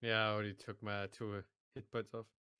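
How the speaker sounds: sounding defeated. Answering the game master about losing two hit points: sounding defeated. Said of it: "You sound so defeated".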